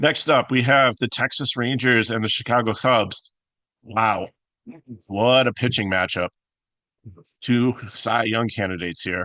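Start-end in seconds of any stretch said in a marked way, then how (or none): 3.8-9.3 ironic, sarcastic, mock-enthusiastic praise. Introducing the next pitching matchup, sarcastic.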